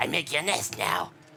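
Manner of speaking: silly put-on creature character voice. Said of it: "that voice is too fun to do".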